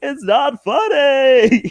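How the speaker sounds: very high, loud, comically drawn out. Showing the only impression done: Jerry Seinfeld impression. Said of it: "Jerry Seinfeld just keeps going".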